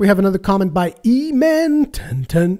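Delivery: weird pitch with the word drawn out. Speaker introducing the next comment to read: weird pitch. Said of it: "in a little weird pitch".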